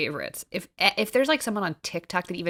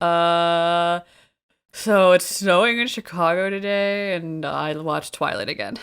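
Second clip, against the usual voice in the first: very slow, dragged-out musing with stretched "uh"; 6 dB louder than usual. Imitating Grace's usual way of opening the show: imitating Grace. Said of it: "Were you imitating me?".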